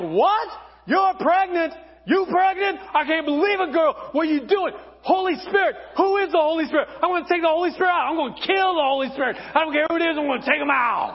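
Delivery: put-on high, frantic, panicked, furious freaking-out rant. Speaker telling the Mary and Joseph story to an audience, acting out Joseph freaking out. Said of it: "he's freaking out".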